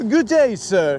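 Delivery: very proper, formal put-on penguin voice. Acting out a penguin waddling up to someone: very proper penguin voice. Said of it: "the penguin sounds very proper".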